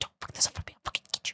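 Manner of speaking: malicious, menacing, threatening whisper. Showing the only way the speaker can whisper: a menacing whisper. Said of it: "I can only whisper with like malicious intent".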